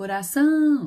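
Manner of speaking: coração called from afar, final ção drawn out. Portuguese stress lesson, calling a word from afar: calling coração, stretching ção. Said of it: "o são é a sílaba em que eu demorei mais".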